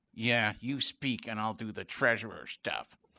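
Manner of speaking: low grumbled aside. Retelling what she said under her breath while another person did the speaking, imitating a mutter. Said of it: "and then under her breath".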